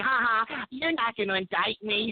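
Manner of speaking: smug, mocking, nose-thumbing taunting jeer. Quoting a politician thumbing her nose at voters: mocking Hillary Clinton impression. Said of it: "Hillary Rotten Clinton thumbing her nose at us".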